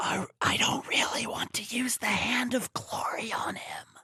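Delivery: hushed, secretive whisper. Acting out the innkeep and his daughter outside his room: whispered. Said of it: "whispering like this".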